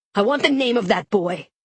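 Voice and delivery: loud, furious, angry shouted outburst. A man suddenly explodes in anger, yelling. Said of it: "Ned yells".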